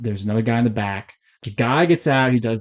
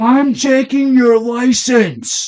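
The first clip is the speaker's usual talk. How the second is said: very high, loud, slow, drawn-out shout; 13 semitones higher, 7 dB louder than usual. Retelling how a cop pulled someone over: imitating a cop yelling. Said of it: "The cop yells at him".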